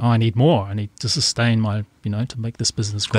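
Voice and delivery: ordinary talk, nothing marked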